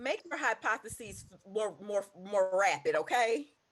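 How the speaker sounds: high, very loud shout. Urging another speaker to make hypotheses more rapid: yelling. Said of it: "why are you yelling at me?".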